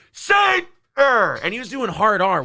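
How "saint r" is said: mock shout, higher and louder. Retelling a fan shouting as they were leaving: imitating someone shouting. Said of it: "he's shouting".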